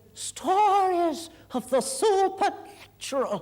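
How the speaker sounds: very slow, drawn-out, deliberate storyteller's announcement. Speaker recalling how an aunt lowered the lights to begin her stories, very hushed voice. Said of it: "in a very hushed voice".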